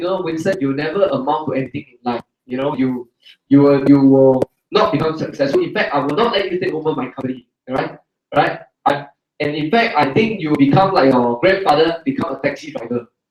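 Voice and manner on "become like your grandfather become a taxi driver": ordinary talk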